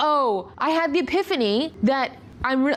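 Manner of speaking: ordinary talk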